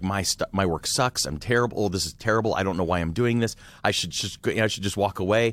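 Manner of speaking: ordinary talk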